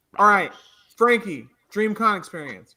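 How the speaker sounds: loud, commanding, authoritative parental tone. Keeping the talk on track, handing over the turn: authoritative dad tone. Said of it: "you pulled out the authoritative dad tone".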